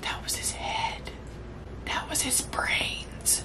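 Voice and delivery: awed, soft, unvoiced whisper under the breath.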